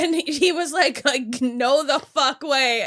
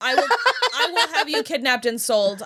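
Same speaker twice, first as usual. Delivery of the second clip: ordinary talk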